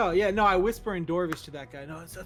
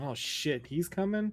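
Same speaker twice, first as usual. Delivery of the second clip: in-character half-whispered aside; 4 dB quieter than usual. Playing a character as Ezra comes up, half-whispering. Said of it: "I whisper this".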